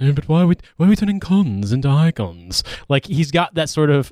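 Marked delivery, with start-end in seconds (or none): 0.0-2.6 put-on English accent, delivered more slowly. Speaker quoting a man they discuss, in a David Baddiel-style English accent. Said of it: "the only English accent I can do convincingly".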